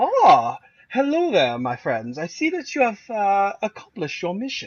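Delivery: bad, failed German accent, pitched high. Voicing President Helmut greeting the players: failed German accent. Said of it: "That's not German".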